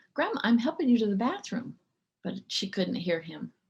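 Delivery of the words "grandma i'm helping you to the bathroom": put-on little boy voice, higher-pitched. Retelling a little boy guiding his grandma to the bathroom, Jeff's little voice. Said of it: "in his little voice".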